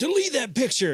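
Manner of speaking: very high, loud, demanding yell. Retelling a photo at a convention being refused: imitating Anthony Daniels yelling. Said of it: "yelled at me".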